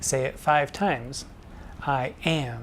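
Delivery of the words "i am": am stressed strongly, I kept light. Teaching iambic pentameter with the sentence I am, stress on am. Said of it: "putting the emphasis on am".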